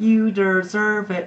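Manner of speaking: bad put-on American accent, very high-pitched. Repeating what people at the stretcher were saying, bad american accent. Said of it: "Like the American accent".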